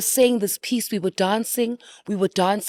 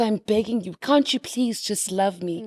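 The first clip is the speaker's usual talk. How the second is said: put-on pleading tone. Recalling saying a character's begging line on stage, acting out a plea. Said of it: "And then she pleads".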